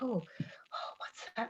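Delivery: put-on whisper. Retelling a pretend game on the walk to school: retelling a whisper. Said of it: "all of a sudden I just whispered".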